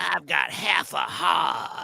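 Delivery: very slow, creaky, rough drawl. Retelling a Redd Foxx impression someone did: Redd Foxx impression. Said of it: "doing an impression of Red Fox saying".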